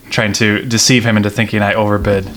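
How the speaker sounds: normal talking voice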